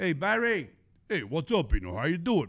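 Brooklyn Italian accent laid on thick. Acting out people from Brooklyn greeting Barry, talking like Rocky. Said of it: "why are you talking like Rocky".

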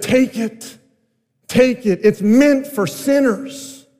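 loud, high stage whisper. Retelling words to a weeping girl at communion: retelling a loud whisper. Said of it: "in a very loud whisper".

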